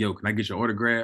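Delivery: mock sarcastic tone. Retelling a guy behind him asking for an autograph: imitating a sarcastic request. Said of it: "He was being sarcastic".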